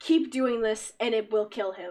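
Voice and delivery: deep, low voice. Game master narrating a voice heard in a player's head, deep voice. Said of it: "in the same deep voice".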